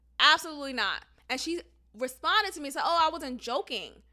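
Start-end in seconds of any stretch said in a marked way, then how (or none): none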